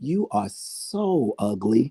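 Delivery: kind, nice, sweet, very slow and drawn out. Showing how nicely one can talk to Michelle: sweet, nice tone. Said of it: "Y'all see how nice I said that? ... I said I was so nice and kind".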